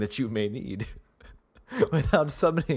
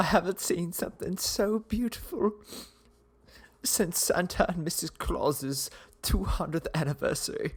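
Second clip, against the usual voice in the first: teary, choked-up voice, almost crying; 4 semitones higher, 4 dB quieter than usual. Voicing a sergeant with hands over his heart: teary, moved voice. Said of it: "he's got tears in his eyes, and he's like".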